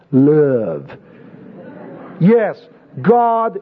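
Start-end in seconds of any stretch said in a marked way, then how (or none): 0.1-0.9 southern American drawl with "love" drawn out. Talking about God being love, speaker says love in a southern accent. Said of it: "with a southern accent".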